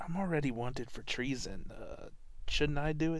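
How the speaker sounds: acted-out whisper. Retelling how one character whispers to another, in a whisper. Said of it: "whispers to Kay like".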